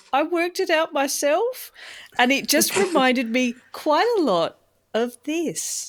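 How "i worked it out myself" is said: tiny, small voice, pitched up. Retelling a man answering who explained the cartoon, in a small voice. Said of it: "Mike says in this small voice".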